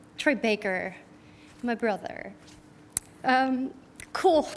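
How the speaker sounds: emotional, tearful voice, crying through the words. Giving an award speech and thanking a fellow nominee, crying. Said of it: "Now I'm crying".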